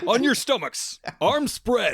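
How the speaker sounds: very high, pull-string action-figure talking-toy voice. A guest, just introduced, answers the host's greeting: G.I. Joe toy voice. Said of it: "it's a pretty good impression, but also sounded like an old G.I. Joe toy".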